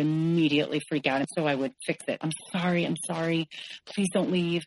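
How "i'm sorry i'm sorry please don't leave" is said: put-on pleading. Retelling own past apologies after a fight, imitating own past begging. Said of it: "And I would, like, beg".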